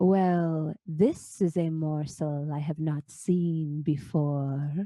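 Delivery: very slow, drawn-out lurking monster voice. Voicing a large-eyed creature in the dark that spots a player: lurking creature voice. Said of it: "you hear a voice say".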